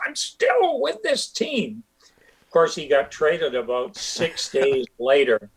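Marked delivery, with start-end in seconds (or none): 0.1-1.8 mock very high, wild, swooping scream. Recalling Jack getting in the speaker's face before a game, retelling Jack screaming. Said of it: "he's right in my face".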